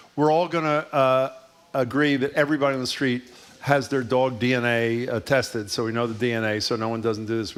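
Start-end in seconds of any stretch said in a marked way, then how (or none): none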